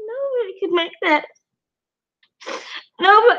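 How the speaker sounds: high voice, crying through the words. Under hard questioning, a witness answers the lawyer, crying while talking. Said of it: "why are you crying right now?".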